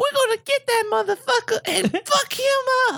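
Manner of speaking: very high, threatening action-movie voice. Quoting a movie character's line: sounding like Sweet Pea from Police Academy. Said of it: "You sound like Sweet Pea from Police Academy".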